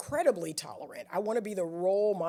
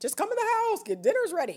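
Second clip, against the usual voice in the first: very high, loud hollering yell; 5 dB louder than usual. Retelling how the yellers in the childhood house called out: imitating family yelling. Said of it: "They just yell".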